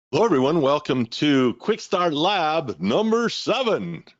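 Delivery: slow radio-announcer voice. Opening a lab session with a welcome in an announcer voice. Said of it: "did you like my announcer voice".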